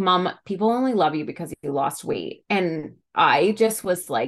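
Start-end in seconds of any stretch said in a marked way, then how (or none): none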